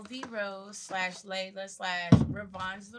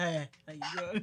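sleepy, groggy, fresh-out-of-bed voice; 3 semitones lower, 4 dB quieter than usual. Teasing another speaker by imitating their greeting: imitating a just-woke-up voice. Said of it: "sounded like you just woke up".

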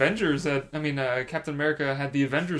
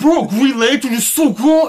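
spitty put-on Cuban accent, higher and louder; 10 semitones higher, 13 dB louder than usual. Doing an impression of Neri when asked: imitating Neri. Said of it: "do another impression of Neri".

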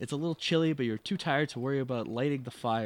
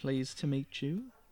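put-on child voice, quieter; 4 dB quieter than usual. Voicing a character's ten-year-old daughter in a scene: stupid Ruth voice. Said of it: "I don't know what stupid voice I want to do for this character now".

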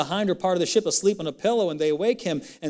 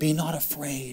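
mock sweet, tender tone, soft and low; 4 semitones lower, 5 dB quieter than usual. Retelling what was said to a man in Scripture: retelling a sweet tone. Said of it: "in the same sweet tone".

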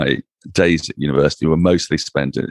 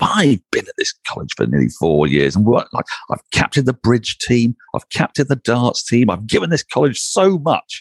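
put-on grand, self-important, pompous voice, pitched up; 7 semitones higher than usual. Recalling thoughts on being refused a college room after term, mock-pompous. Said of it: "I suddenly became very pompous and thought".

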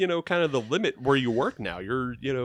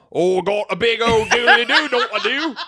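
put-on British accent, much higher, louder, slower; 11 semitones higher, 10 dB louder than usual. Explaining how different accents are done, demonstrating a british accent. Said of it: "when you do British accent, you go".

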